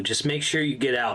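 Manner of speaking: ordinary talk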